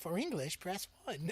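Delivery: automated, recorded phone-menu prompt voice. Retelling answering a phone call: imitating an automated phone menu voice. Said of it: "I wish I could do that voice convincingly".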